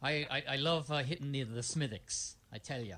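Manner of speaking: a little put-on Irish brogue, light. A speaker answers the question of who drinks the most: put-on Irish accent. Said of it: "he's doing a little Irish".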